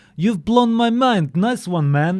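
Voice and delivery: high, slow mock Russian accent.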